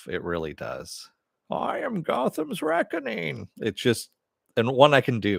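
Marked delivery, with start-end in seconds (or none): 1.5-3.5 creaky, swooping, very high and rough villain voice. A speaker shows off a voice he can do, in a Bane voice. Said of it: "the Bane voice just makes me laugh".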